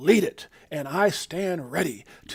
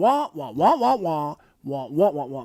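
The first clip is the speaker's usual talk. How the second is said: wahs swooping up and down, cartoon style. Describing someone's talk, in a Charlie Brown adult wah-wah voice. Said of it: "you may as well be talking in your Charlie Brown voice".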